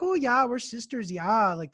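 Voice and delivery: put-on classic small-town North Dakota accent, drawn out. Retelling what sisters at a diner said, imitating a North Dakota accent. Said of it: "classic North Dakota accent".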